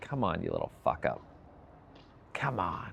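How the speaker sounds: mock frustrated, fed-up whisper under the breath. Retelling harsh talk to oneself: imitating own fed-up frustrated inner voice. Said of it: "part of me is just fed up and frustrated".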